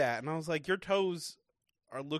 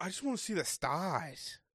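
put-on Australian accent, quieter; 5 dB quieter than usual. Imitating Harrison asking to sleep outside: Harrison impression, Australian accent. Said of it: "That's Austra-".

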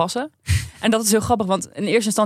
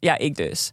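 play-acted knowing, smug, self-pleased tone; 4 semitones lower than usual. Retelling how Kim answered a staff member: imitating a smug grinning reply. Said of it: "Zo met zo'n grijns".

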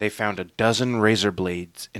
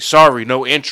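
raised voice, slower; 3 semitones higher, 9 dB louder than usual. Showing how he stops teenagers at the gate, in a raised voice. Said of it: "I raise my voice and I say".

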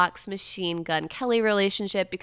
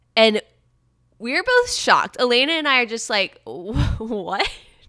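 ordinary delivery

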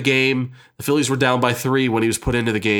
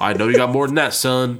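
weird, odd put-on Southern accent. Retelling how an actor played a baseball scout in a movie, weird southern accent. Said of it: "I'm going to have this weird Southern accent".

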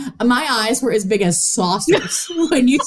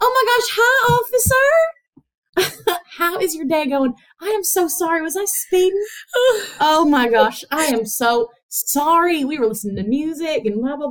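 high, sugary, put-on Southern belle accent; 6 semitones higher than usual. Retelling how she talked to a police officer who pulled her over, imitating a Southern belle. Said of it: "suddenly she is a Southern Belle".

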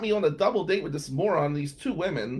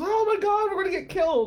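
very high, terrified, panicked shrieking. Retelling friends on a haunted hayride: imitating people screaming in fear.

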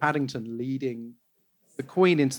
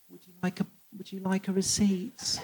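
put-on really sad voice, quieter; 3 semitones higher, 7 dB quieter than usual. Retelling how checkout staff asked about a receipt, in a mock-sad voice. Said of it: "in a really sad voice".

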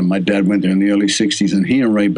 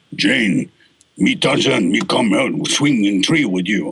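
burly, puffed-up, big, tough jungle-hero send-up voice. Retelling how an actor sent up a tarzan line: big tough tarzan voice. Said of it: "while he's doing this big, tough voice".

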